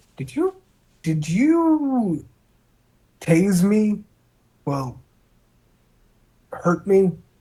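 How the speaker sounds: innocent, curious tone, high and swooping, not upset. In a roleplay game, voicing John Foley, in an innocent, curious tone. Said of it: "in an innocent tone, like John Foley is just like more curious than upset".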